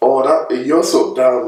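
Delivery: slow, playful, joking teasing. Showing how an insult sounds when said as a joke: joking teasing tone. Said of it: "they will know it's a joke by the way that you say it".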